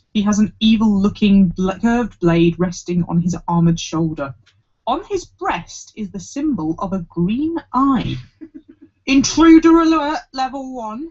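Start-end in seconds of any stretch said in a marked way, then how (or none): 9.0-11.1 growling voice, pitched up. The armoured guard blocking the way to the next level speaks, growling. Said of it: "he growls".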